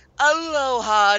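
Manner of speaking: very high, stretched-out, drawn-out put-on voice. Retelling a scene and announcing it, doing her voice. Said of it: "I have to do her voice".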